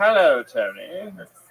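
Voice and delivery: put-on high caveman voice with British accent. Greeting the host in costume as a caveman: caveman with a British accent. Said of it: "caveman with a British accent".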